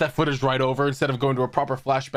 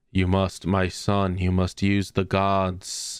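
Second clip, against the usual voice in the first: solemn put-on fatherly voice, lower pitched; 7 semitones lower than usual. Acting out the Pharaoh's dad urging his son: imitating the Pharaoh's dad. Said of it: "It's more like".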